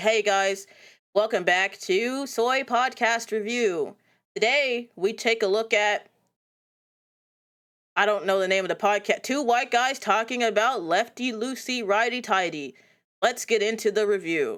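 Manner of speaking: slow, toneless, dead-level monotone. Podcaster demonstrating a mock intro for a podcast review show, monotone. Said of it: "I'm gonna do it in the most monotone version".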